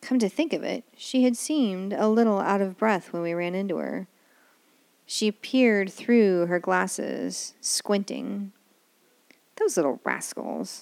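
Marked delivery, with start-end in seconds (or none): 9.5-10.8 low mutter, half to oneself. A woman holding the visitors' tickets, muttering. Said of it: "she muttered".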